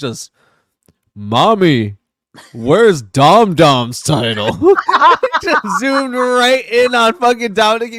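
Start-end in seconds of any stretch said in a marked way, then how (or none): 0.0-4.5 slow, deep, drawn-out monster voice. Act out what he said in the segment, in a deep Godzilla voice. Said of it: "with his deep ass Godzilla voice".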